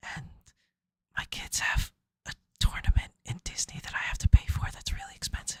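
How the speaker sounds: whispered under the breath, hushed and breathy. Speaker explaining to the group why they can't go to Japan: whispering. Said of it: "I don't know why I'm whispering".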